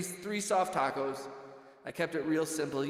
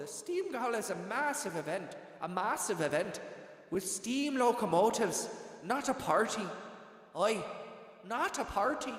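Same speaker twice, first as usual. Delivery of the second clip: put-on Irish brogue accent; 4 semitones higher than usual. Reading out text about the steam gala, irish accent. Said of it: "I'm gonna start reading everything like that".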